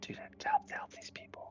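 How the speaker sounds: unvoiced, urgent whisper.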